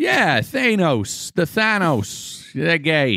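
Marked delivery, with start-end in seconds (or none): 0.4-2.5 put-on Boston accent, pitched up. Among joking cohosts, repeating a name in a Boston accent. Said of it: "Is that a Boston accent?".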